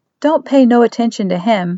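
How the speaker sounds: plain reading voice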